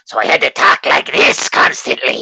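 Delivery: high, loud goblin creature voice. Describing voicing a goblin for a Fallout mod, goblin voice. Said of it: "it was like a goblin or some shit".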